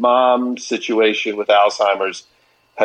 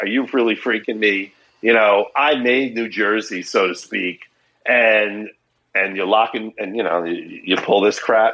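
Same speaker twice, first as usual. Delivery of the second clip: ordinary talk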